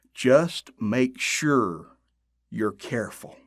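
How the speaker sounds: foreboding, darkly ominous tone. A narrator reads a man's parting warning to Jack in an ominous voice. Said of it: "said in an ominous voice".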